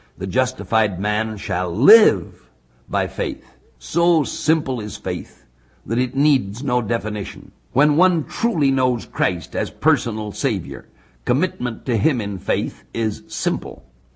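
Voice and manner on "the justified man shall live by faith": slow delivery with "live" strongly stressed. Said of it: "the emphasis is on the life".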